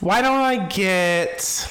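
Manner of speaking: high-pitched, very slow, dithering, drawn-out voice.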